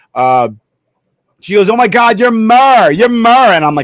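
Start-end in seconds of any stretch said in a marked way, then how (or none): 1.7-3.6 put-on poor, loud Staten Island accent. Act out a lady who takes you for Murr, in the worst Staten Island accent. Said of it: "in the worst Staten Island accent".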